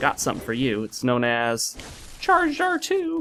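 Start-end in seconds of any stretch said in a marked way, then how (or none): 2.2-3.2 bad, very high, squeaky cartoon-mouse voice. Gamer hands an item to a companion, bad Mickey Mouse voice. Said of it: "I don't know why I said it in Mickey Mouse voice".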